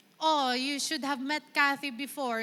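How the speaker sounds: put-on British accent, laid on thick. Retelling what a friend said to her husband, imitating a thick british accent. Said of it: "in her thick British accent ngayon".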